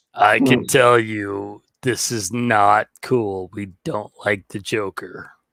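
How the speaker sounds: put-on hero voice, dropped as deep as possible. Taking a turn at the Batman in a playful voice bit, deep Batman voice. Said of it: "if I really go down deep, I can actually be the Batman".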